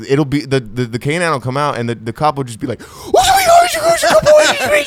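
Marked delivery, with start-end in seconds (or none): 2.8-4.8 put-on hyped-up excited voice. Imitating a cop amping up a police dog: imitating a cop amping up a dog. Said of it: "how much the cops amp up their dog".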